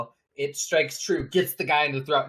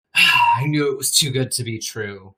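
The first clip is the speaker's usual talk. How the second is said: loud, raised, belted villain voice; 5 dB louder than usual. Voicing the Grin as the ambush fails: the Grin's voice. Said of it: "the Grin looks at you, Estrella, and is like".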